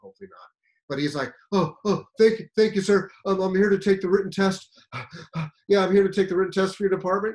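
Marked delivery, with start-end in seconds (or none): 1.5-7.4 put-on panting, out of breath, higher and louder. Retelling a late test-taker who ran from his car: imitating someone out of breath. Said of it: "this guy's huffing and puffing".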